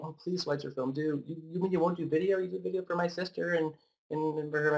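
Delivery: high, tearful, crying, pleading voice, acted. Retelling how crying people begged for video: imitating a crying plea. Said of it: "People crying, saying".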